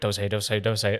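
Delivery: put-on anxious tone. Acting out the voice in their head while trying not to slip up: mock anxious inner voice. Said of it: "the anxious voice in my head going".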